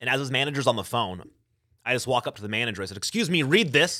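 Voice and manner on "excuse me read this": mock very loud delivery, higher. Retelling confronting a manager at the dealership: retelling saying it very loud. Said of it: "very loud".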